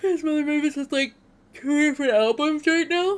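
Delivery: talking through a yawn. Recommending songs after getting up early and going to bed late, yawning while talking. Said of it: "Sorry, I'm yawning".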